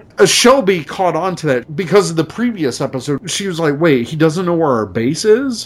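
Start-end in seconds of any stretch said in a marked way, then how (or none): none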